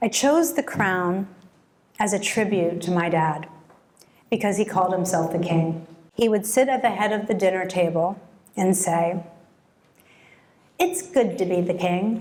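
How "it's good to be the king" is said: clumsy, funny, bad put-on English accent. Retelling the dad's saying at the head of the dinner table: funny bad English accent. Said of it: "in a funny English accent".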